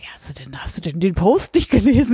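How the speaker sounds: put-on thoroughly indignant, outraged tone. Retelling their own reply to a man asking about the cat, acted out indignant. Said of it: "Ganz entrüstet".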